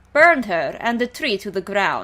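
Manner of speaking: clumsy, bad put-on Russian accent. Reading out a Russian woman's line in a story, attempted Russian accent. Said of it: "I can't do her accent, she's Russian".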